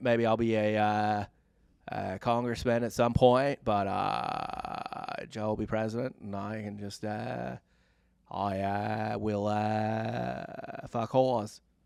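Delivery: dragged out, stalling on every "uh". Imitating JFK musing that his brother Joe will be president: JFK impression. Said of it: "Great impression".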